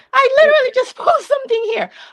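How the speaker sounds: high, fast, shocked disbelief.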